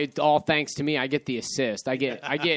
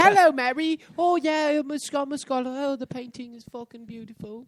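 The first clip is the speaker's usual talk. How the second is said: pretend British accent, pitched way up high; 12 semitones higher than usual. Friend describes a movie's pizza guy pretending to be British, doing Tuck's fake British accent. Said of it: "who pretends to be British, and he's like".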